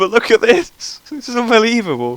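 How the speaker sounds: very high pitch, giggling and laughing through words. Commentating on a rider's botched landing, laughing while talking. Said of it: "I'm sorry I'm laughing so much".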